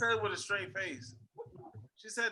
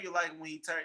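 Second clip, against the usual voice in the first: ordinary talk, nothing marked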